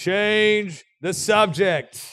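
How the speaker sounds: loud, booming voice. Recalling the father calling out from his bedroom, imitating dad's booming voice. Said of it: "you would hear this booming voice from my dad's bedroom".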